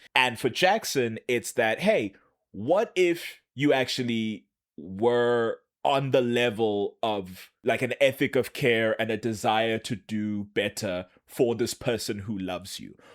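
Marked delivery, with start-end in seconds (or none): none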